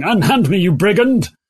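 theatrical, stagy high cry from a large voice. A character screams from off to the right-hand side, loud screaming. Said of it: "you can hear a large voice screaming".

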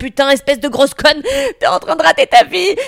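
high, crazed, unhinged ranting delivery. Retelling running late and insulting herself: imitating herself ranting like a madman. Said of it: "je m'auto-insulte comme les zinzins du métro".

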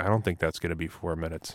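quiet, bone-dry, dead-straight deadpan. Retelling a booth moment when a player faked a cut, Mike Milbury mock-deadpan. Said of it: "Mike Milbury completely deadpans".

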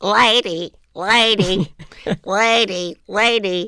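scratchy, rough, slow, drawn-out comic voice. Describing Jerry Lewis's funny voice, quoting what he always says: scratchy Jerry Lewis voice. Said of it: "with his scratchy kind of voice. He always goes".

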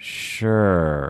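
unwilling, hesitant, half-hearted, reluctant agreement. Role-playing a patient with PTSD agreeing to something, mock-hesitant 'sure'. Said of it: "the way I role played that... It doesn't sound like an affirmative consent".

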